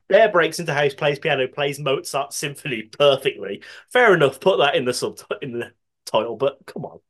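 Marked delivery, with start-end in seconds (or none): none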